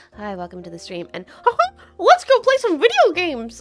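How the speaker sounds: cartoon-mouse voice, Australian accent. Showing Dave his streaming mode, greeting viewers: Australian Mickey Mouse voice. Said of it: "I sound like an Australian Mickey Mouse".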